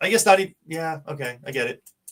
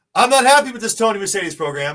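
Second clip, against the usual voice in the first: loud, pitched-up shout; 6 semitones higher, 6 dB louder than usual. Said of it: "He's talking in caps".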